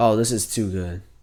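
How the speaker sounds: ordinary talk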